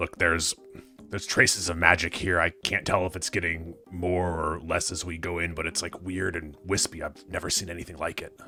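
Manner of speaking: low, soft muttering under the breath. Telling the party in character about traces of magic: speaking under breath. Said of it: "under my breath to the rest of the party".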